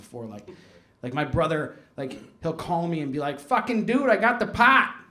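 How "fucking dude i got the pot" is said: put-on casual, loud, high New England townie accent. Retelling a phone call from a little brother, in a New England townie accent. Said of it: "he sounds like that New England townie character".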